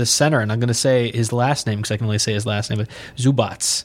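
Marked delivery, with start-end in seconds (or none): 2.8-3.8 put-on Russian accent. Saying a player's last name the only way possible: put-on russian accent. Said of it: "I have to say in, like, a Russian accent".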